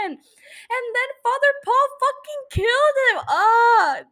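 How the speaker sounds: loud, furious, drawn-out scream. Upset about a character's death, the speaker screams angrily into the mic. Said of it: "I'm literally screaming into a mic".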